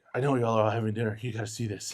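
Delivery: acted breathless, out-of-breath voice. Retelling running over to the family at dinner: retelling being out of breath. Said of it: "I was literally almost out of breath".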